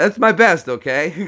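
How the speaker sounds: usual speaking voice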